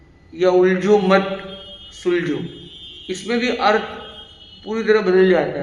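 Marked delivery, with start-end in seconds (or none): 0.5-2.3 brief pause right after the word मत. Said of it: "खाली comma के placement बदलने से".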